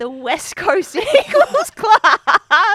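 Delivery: high, loud, slow speech laughing through the words.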